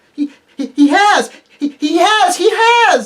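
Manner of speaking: squeaky, very high, loud little voice. Reading a story aloud, a young squirrel loses its head, squeaky young squirrel voice. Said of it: "It squeaked".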